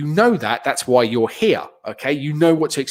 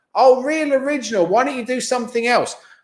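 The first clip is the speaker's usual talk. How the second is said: loud, higher put-on drunk woman's shouting; 8 semitones higher than usual. Retelling a heckle from a woman in the audience: imitating a drunk woman shouting. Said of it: "at the top of her lungs".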